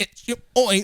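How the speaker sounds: fake audio glitch voice. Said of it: "I'm, like, glitching".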